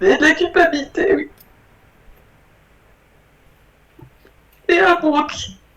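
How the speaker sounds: crying while talking. Answering a question about what is felt during the session, crying while talking. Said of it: "Continuez de pleurer si vous avez besoin de pleurer".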